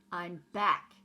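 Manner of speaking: husky, very loud rodent voice. Reading a story, the rat comes back after a night out; Templeton's husky voice. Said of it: "he said in a husky voice".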